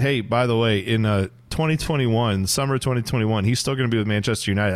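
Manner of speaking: plain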